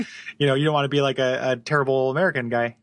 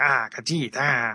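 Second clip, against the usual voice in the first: weaselly, weasel-like voice. Mocking how the Khajiit in the game all sound: weaselly Khajiit voice. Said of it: "the same kind of Weasley".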